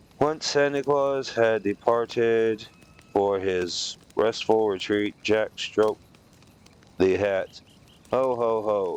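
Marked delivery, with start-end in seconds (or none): 8.1-9.0 flat, even delivery. Narrator reading Jack trying out a Santa laugh, in a flat voice. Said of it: "he attempted in a flat voice".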